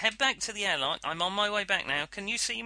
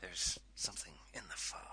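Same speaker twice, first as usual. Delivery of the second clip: whispered, breathy voice; 16 dB quieter than usual. Chatting about a scary film, saying a line as a William Shatner impression. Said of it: "I don't know why I said that in a William Shatner way".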